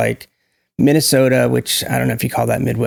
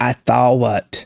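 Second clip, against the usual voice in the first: slow Georgia drawl stretching out I thought what. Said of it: "They say".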